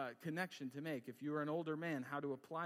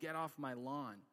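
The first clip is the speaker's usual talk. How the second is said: put-on grumpy old man voice, much slower. Explaining the stereotype of older men, the speaker demonstrates a grumpy old man impression. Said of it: "if someone did an old man impression".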